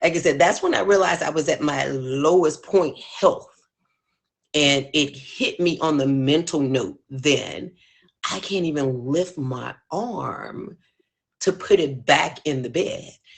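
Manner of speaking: choked-up voice, on the verge of tears. Recalling realizing they were at their lowest point of health, choking up, near tears. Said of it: "I'm about to cry now".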